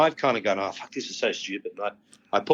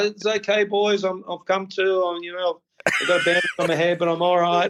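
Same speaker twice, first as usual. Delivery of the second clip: mock calling out at full voice, high and raised; 8 semitones higher than usual. Recounting a chaotic night, retelling own yell out to the boys. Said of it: "I'm yelling out".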